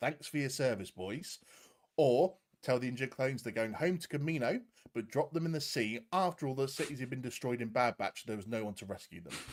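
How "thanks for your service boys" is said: normal talking voice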